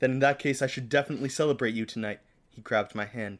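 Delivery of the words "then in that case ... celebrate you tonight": ordinary talk, nothing marked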